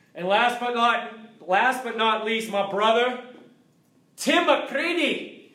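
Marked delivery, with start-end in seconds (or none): 4.2-5.3 put-on Scottish accent, pitched up, on a name. Announcing a brother's name for fun in a Scottish accent. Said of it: "I love saying your name in Scottish".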